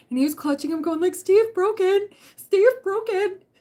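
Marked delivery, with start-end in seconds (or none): 1.1-3.3 put-on high, slow, sobbing little kid wail. Retelling a three-year-old clutching his teddy bear, imitating a crying little kid. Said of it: "and he's like crying".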